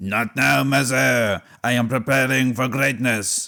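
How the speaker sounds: put-on Italian-sounding accent. Called to dinner by his mother, the young Napoleon answers in an Italian-sounding Napoleon voice. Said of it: "that sounded more Italian then".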